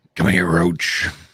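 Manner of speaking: hoarse, rough-edged, raspy put-on delivery. Playing along after being told of a raspy voice: raspy Witcher voice. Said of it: "You got that raspy Witcher voice going".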